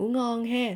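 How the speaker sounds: "ngủ ngon ha" in southern Vietnamese accent. Showing learners how to wish good night: southern Vietnamese accent. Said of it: "in southern accent you can say".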